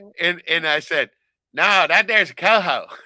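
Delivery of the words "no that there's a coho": put-on loud, slow Southern US drawl. Retelling a reply to the stranger on the dock: imitating a southern accent. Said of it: "grabbed his accent just immediately and threw it right back".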